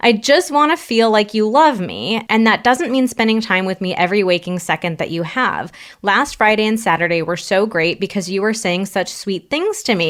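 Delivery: ordinary talk, nothing marked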